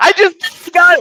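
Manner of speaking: excited yelling. Realizing the show is already live, yelling excitedly. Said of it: "Don't yell".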